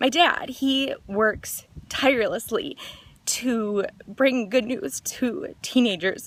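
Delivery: very slow, tearful, crying voice. Speaker tells listeners about their family, crying while talking. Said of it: "I'm going to stop crying".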